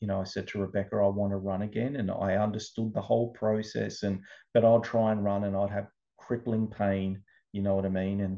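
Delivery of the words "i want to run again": normal talking voice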